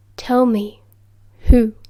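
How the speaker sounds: very low, dark voice. Sirius presses Moony for an answer while Lily and James watch, very low, dark voice. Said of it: "in a very low, dark voice that none of them had ever heard before".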